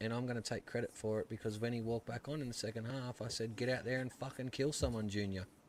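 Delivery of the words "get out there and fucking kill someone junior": ordinary talk, nothing marked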